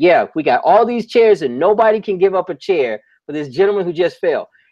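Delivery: high, indignant, angry voice. Retelling scolding onlookers who would not give up chairs: retelling own angry call. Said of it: "that inflamed me even more".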